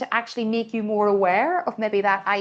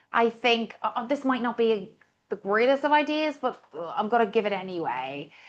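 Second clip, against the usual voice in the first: hesitant, hemming, apologetic, self-undercutting hedging; 4 dB quieter than usual. Showing an example of the apologetic fillers that kill credibility: put-on apologetic hedging. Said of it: "all these little apologetic isms".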